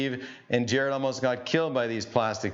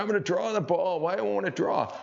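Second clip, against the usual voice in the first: put-on puzzled, pitched-up old grandpa voice; 3 semitones higher than usual. Explaining golf grip in a video, imitating his grandfather. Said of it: "that's my grandfather's voice".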